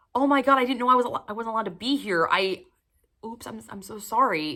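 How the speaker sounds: feigned innocent, oops-sorry apologetic tone. Showing how the cheeky lines were not delivered: mock-innocent apology. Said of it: "this innocent not knowing".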